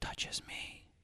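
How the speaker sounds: faint, eerie ghostly whisper, barely audible. Retelling the voice caught on a played-back recording, imitating a ghost's whisper. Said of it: "it was like kind of a whisper".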